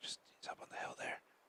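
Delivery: barely audible hushed whisper, very quiet. Spotting movement up on the hill so it won't hear: whispering. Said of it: "I'm gonna start whispering so he doesn't hear me".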